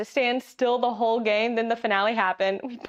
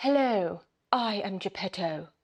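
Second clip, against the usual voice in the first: put-on slow, drawn-out posh RP accent; 3 semitones lower, 4 dB quieter than usual. Deciding how the villain character should sound: Geppetto in an RP accent. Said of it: "would probably sound more R P".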